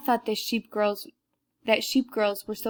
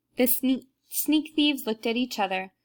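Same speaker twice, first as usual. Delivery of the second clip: ordinary delivery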